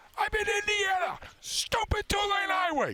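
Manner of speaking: very high, frustrated yelling rant. Telling a story about a car ride, the speaker re-enacts yelling at the radio. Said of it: "I'm yelling at the radio going".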